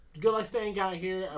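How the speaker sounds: ordinary talk, nothing marked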